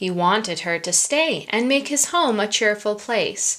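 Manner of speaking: plain reading voice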